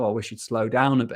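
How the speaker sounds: plain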